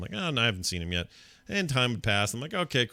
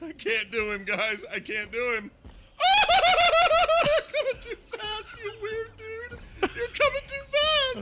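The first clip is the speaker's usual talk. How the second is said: very high, silly, swooping cartoon voice. Panicking as a giant foe chases you in a game: sounding like Goofy. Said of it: "You sound like Goofy sometimes when you do that".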